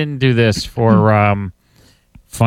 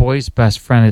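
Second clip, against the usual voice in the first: normal talking voice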